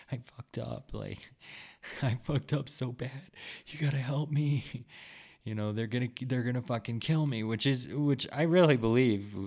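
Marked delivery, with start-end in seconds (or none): 0.1-4.6 mock desperate, tearful, pitched-up pleading through tears. Retelling begging a man for help with tears in his eyes, retelling own tearful pleading. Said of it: "with fucking tears in my eyes, pleading".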